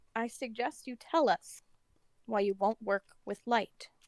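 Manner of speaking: very soft, hushed, very quiet speaking. A player's character casts a suggestion on another character, speaking very quietly. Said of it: "very quietly".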